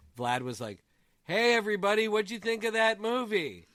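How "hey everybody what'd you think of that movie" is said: loud, raised, very high voice that carries. Retelling how Vlad talked during a theater ceremony, imitating Vlad talking loudly. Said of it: "talking at this raised volume".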